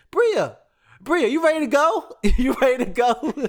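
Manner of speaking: very high-pitched, loud, shrill yell. Retelling a mom in the stands calling to her daughter, imitating a mom yelling. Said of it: "her mom is yelling in the stands".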